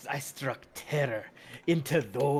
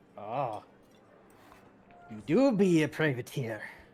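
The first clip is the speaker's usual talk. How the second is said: put-on tipsy, drunken tavern-keeper voice; 4 dB louder than usual. Voicing the barkeep who greets a newcomer: drunken barkeep voice. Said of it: "drunken speak".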